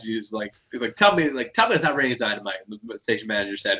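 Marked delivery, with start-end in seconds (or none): none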